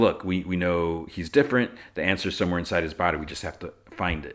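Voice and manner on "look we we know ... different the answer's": plain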